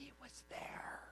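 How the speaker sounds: slow whispering voice.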